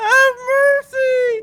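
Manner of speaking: crying while speaking. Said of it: "He's crying".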